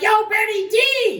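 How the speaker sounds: mock, very high, loud hollering voice. Telling a story about spotting someone on the street, retelling own yell. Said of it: "And I yelled".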